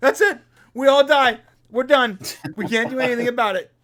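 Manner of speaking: high, loud wail of panic and despair. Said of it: "the security officer's like".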